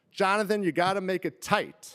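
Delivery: mock dad yell. Retelling a family story, dad calls out instructions: imitating dad yelling. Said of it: "my dad starts to yell".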